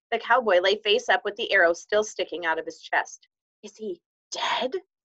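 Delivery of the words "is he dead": hushed, horror-struck whisper. Patrick sees the tiny cowboy with an arrow in his chest and whispers in horror. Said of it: "whispered Patrick in horror".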